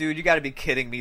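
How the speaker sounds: normal talking voice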